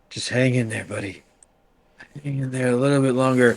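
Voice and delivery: whispering softly. Speaking in character to Squid after collapsing: whisper. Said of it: "try to whisper to".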